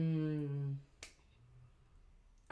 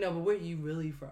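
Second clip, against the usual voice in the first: ordinary talk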